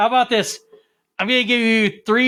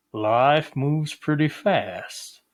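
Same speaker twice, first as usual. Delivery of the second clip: very low, very slow, deliberate voice; 7 semitones lower, 4 dB quieter than usual. Sharing an impression when asked to show it: Morgan Freeman impression. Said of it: "Here's my impression of Morgan Freeman".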